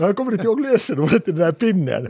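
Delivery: talking through laughter. Speaker admits not remembering this memory stick's password, laughing while speaking. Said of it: "Ni får ursäkta att jag skrattar".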